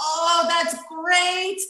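put-on high, slow, thick Iranian accent. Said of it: "in his, like, thick Iranian accent".

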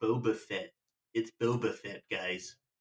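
nasally put-on American accent. Two speakers debate how to pronounce Boba Fett; one settles it: nasal American accent. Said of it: "Is that your American accent?".

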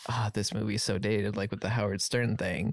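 usual speaking voice

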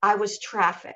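ordinary talk

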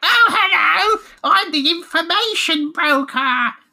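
very high, slow, loud, blaring critter voice. Describing big-eared rabbit characters and mimicking how they talk: loud put-on rabbit voice. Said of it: "big loud bastard".

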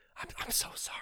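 halting, barely voiced, soft, stammering whisper. Retelling apologizing to people nearby during a movie: imitating a whisper.

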